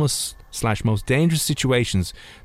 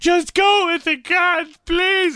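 very high, tearful, crying pleading voice. Retelling a woman pleading beside her man as he is arrested: imitating a woman crying. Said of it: "she was sitting down there beside him crying".

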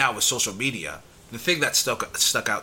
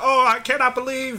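put-on old-time radio announcer voice, much higher and louder; 5 dB louder than usual. Speaker retelling the news reporter's reaction to the Hindenburg crash; old-timey radio announcer voice. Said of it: "he's doing it in that old-timey radio voice".

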